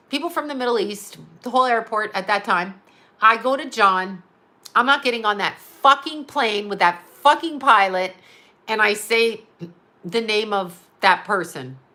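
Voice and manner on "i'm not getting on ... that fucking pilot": normal talking voice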